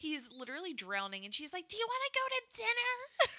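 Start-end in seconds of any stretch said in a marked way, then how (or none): 1.7-3.4 very high-pitched, loud, cutesy, squeaky chirp. Retelling a film scene where a character asks a drowning man to dinner, imitating a loud squeaky voice. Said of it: "she's loud, squeaky voice".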